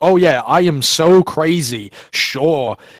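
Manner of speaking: put-on sarcastic tone. Speaker retells a Canadian man's Facebook reply after being called crazy: retelling a sarcastic remark. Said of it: "said sarcastically on Facebook".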